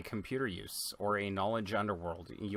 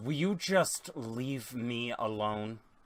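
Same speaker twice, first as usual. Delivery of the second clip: long, drawn-out, frustrated, grumbling creature growl. Narrating a scene, voicing the Wookiee in the engine compartment growling in frustration. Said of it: "the Wookiee growls in frustration and goes".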